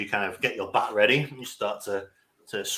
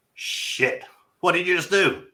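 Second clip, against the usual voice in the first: loud, pitched-up shouting; 9 semitones higher, 4 dB louder than usual. As the alarm shrieks, the narrator voices Doctor Rast shouting out. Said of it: "Doctor Rast kind of shouts out".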